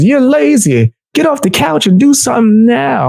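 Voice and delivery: put-on berating, scolding old television commercial announcer voice. Retelling an old college commercial that made him feel horrible: imitating a scolding commercial announcer. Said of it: "That was a crazy commercial back in the day".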